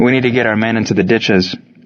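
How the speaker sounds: plain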